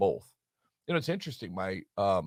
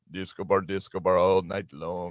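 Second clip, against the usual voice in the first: put-on Russian-sounding accent on a repeated, refrain-like phrase; 4 semitones lower, 4 dB louder than usual. Retelling what a nightclub was called there, Russian accent. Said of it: "you sound Russian".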